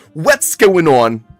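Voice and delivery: put-on very loud, high-pitched Philadelphia accent. Repeating how a man introduces himself, in Michael Roman's Philadelphia accent. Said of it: "He's got like a Philadelphia accent".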